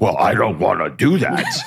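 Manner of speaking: dim, clueless, dopey man's voice. Retelling how women imitate men: imitating a dumb guy voice. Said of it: "he always talks like this guy".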